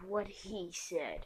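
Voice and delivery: very dark voice. Telling a story, voicing Sasuke agreeing with Naruto: very dark voice as Sasuke. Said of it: "in a very dark voice".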